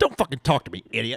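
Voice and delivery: macho, dismissive tough-guy voice. Retelling a video of a boyfriend answering his girlfriend: Andrew Tate impression. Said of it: "he's doing his Andrew Tate impression".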